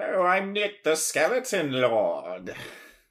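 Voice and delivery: big, high, loud cartoon villain voice, "Lord" drawn out. Co-host introduces himself at the show's opening, doing a Skeletor impression. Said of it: "that was like my Skeletor impression".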